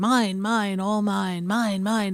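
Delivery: cartoon rabbit character voice. Picturing a cartoon running around holding everything: Bugs Bunny voice. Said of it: "I guess it's Bugs Bunny going".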